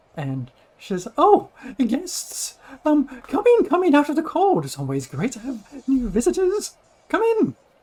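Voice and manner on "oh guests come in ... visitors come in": very high, swooping small woman's voice. Narrating a game scene, voicing a small halfling-sized woman greeting guests: small halfling woman voice. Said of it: "you have to maintain that voice".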